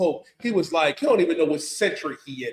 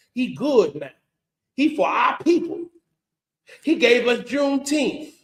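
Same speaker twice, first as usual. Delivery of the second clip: fake Southern accent, pitched up; 7 semitones higher than usual. Imitating a man on TikTok, speaking in a put-on southern accent. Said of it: "Talking with that southern accent".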